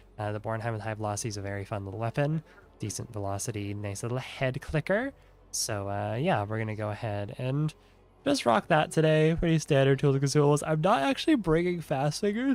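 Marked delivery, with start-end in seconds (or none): 10.7-12.6 words pushed out mid-yawn, pitched up. Explaining today's loadout in a gameplay video, yawning while talking. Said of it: "I'm yawning as I'm saying this".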